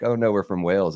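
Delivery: ordinary talk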